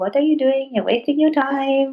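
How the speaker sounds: high put-on Indian accent, judging tone. Imitating people who judge someone for pursuing a passion: put-on Indian accent. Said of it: "Did you try to put an Indian accent there?".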